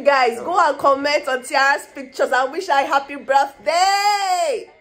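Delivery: loud thrilled excited shout, birthday drawn out. Speaking to the audience about Tiara's birthday, shouting excitedly. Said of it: "Why are you shouting?".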